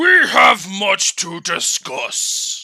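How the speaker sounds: deep, stern royal voice. A dwarf king addressing Kraken, in Thorgrim's deep, booming voice. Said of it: "Thorgrim said this deep, booming voice".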